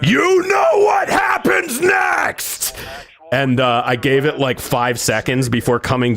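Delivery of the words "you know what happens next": very high, slow, drawn-out scream. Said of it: "I just scream down the stairs".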